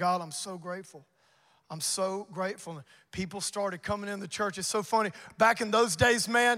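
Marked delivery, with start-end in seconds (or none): 0.0-2.7 mock weeping, quieter, slower. Recalling that first Sunday at church, retelling past weeping. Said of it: "I just started weeping".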